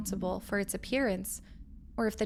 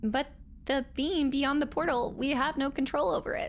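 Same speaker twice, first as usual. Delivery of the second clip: high, slightly timid put-on nerdy voice; 5 semitones higher than usual. Performing a character line in a nerdy, timid voice. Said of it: "I was going for my nerdy voice. And I uh, I was trying to be a little bit timid too".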